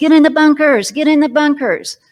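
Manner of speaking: loud, high-pitched yelled shouting. Recounting incoming rockets, ordering troops into bunkers: retelling a yell to troops. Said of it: "And I'm yelling to the troops".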